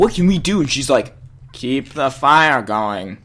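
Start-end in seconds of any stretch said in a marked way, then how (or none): 1.5-3.0 put-on low, slow, dragged-out old-lady voice. Retelling Granny's answer when asked what to do, in an old lady impression. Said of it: "that was my best old lady impression".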